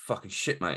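put-on blunt flatness. Retelling how a man answered one of the reps' questions, imitating a very deadpan reply. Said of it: "very, very deadpan".

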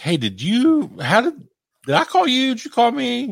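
put-on frantic, stumbling, flustered panic, very high, rising. Retelling calling him back over FaceTime, acting out past panic. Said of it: "And then I'm like panicking for no good reason".

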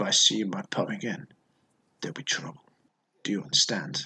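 quiet menacing villain voice. Doing the voices for a film, the speaker tries a film bad-guy voice. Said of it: "in like films when like there's a bad guy".

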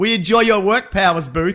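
cross, annoyed tone. Two speakers take turns praising the actor Powers Booth: angry-sounding praise. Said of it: "Even though it sounds like we're angry".

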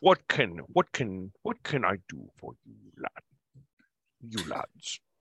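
put-on Scottish accent. A narrator voices a dwarf greeting the arriving group, in Sean Connery voice. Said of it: "in my best Sean Connery".

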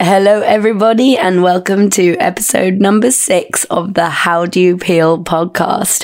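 croaky, hoarse, unwell-sounding voice. Welcoming listeners to a podcast episode, croaky voice from being unwell. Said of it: "I've got a bit of a croaky".

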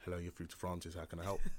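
put-on formal, professional phone voice. Retelling how they answer the work phone: retelling own professional phone voice. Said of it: "it's changed, but I don't speak like that".

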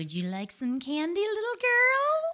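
high, slow, creepy witch voice.

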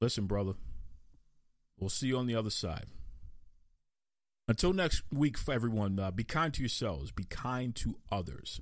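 emotional, voice choking up. Saying goodbye to the Soul Man and signing off: choked up. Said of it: "I'm getting choked up here".

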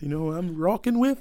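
put-on Saskatchewan-style Canadian accent on rocking. Repeating his own earlier question, in a Canadian accent. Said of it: "What Canadian accent is that?".

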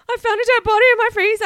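put-on, very high, swooping, near-tearful voice. Retelling a man's 911 call, imitating him almost crying. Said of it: "And he's almost crying".

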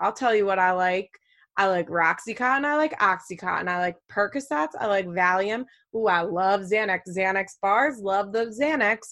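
ordinary talk

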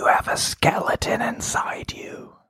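close, secretive whisper, barely voiced. Whispering a line into a captured woman's ear: whispering in character. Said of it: "I whisper in her ear".

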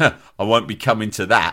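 mock contemptuous, sneering, dismissive tone. Retelling a schoolboy turning down a party invite, imitating a sneer. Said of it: "He sneered".

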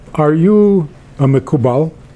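put-on thick Indian accent. Retelling a phone caller's question at the Chabad house, heavy Indian accent. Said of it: "a guy with a heavy Indian accent".

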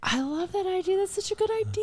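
very high, bubbly classroom teacher voice.

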